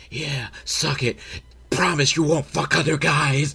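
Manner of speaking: hushed, half-whispered stage whisper throughout. The speaker acts out a guy's dirty talk during sex, imitating someone half-whispering. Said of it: "He's like whispering throughout the whole thing".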